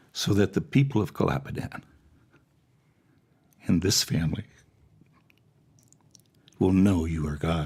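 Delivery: choked-up voice, catching with emotion. Retelling a prayer for healing said aloud earlier, choked up. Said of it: "excuse me if I get a little choked up".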